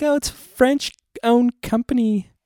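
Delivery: very high, slow, sugary, precious cutesy voice. Speaker imitates people who say Target the French way: mimicking people acting all cute. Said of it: "And they get all cute".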